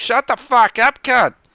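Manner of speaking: put-on very high, shrill, very loud Australian accent. Retelling a heckle meant to sound from the back of the classroom, Australian accent. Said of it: "What the fuck was that accent".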